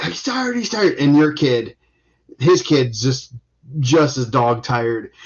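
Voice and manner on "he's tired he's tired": mock coach yelling, very high-pitched. Retelling what coaches yell when a wrestler tires: imitating a coach yelling. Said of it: "the coaches are yelling that".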